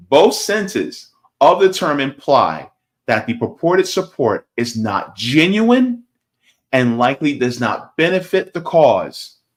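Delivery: deliberate, slow, very distinctly enunciated reading. Reading a definition aloud to viewers so they get the information, slow, very distinct reading. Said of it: "I'm going to read kind of slow, but very distinctly".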